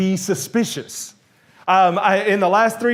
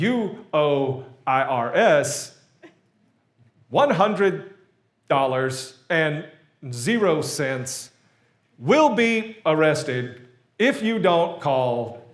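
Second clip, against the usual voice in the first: slow, robotic, computerized female automated voice; 4 semitones lower, 4 dB quieter than usual. Quoting an automated IRS call the speaker answered, in a robotic female voice. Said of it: "in this like robotic female voice".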